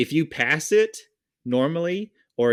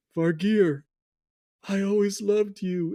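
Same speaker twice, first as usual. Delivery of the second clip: put-on dying character voice, higher pitch; 8 semitones higher than usual. Voicing a character's last words as he fades away: Grimace's farewell. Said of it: "you see him saying".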